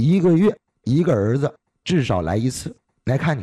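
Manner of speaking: plain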